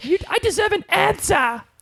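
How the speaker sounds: put-on high-pitched British girl voice. Recapping a story, quoting Claire confronting Dougal in Claire's British girl accent. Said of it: "British girl accent again?".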